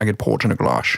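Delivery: put-on Scottish accent. Doing a Sean Connery accent when asked to: Sean Connery accent. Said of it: "Do the port and glass thing".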